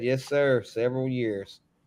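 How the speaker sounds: usual speaking voice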